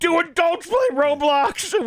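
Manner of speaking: pretend shouting. Reading back a search typed in all caps: mock yelling a search in all caps. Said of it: "Just yelling it".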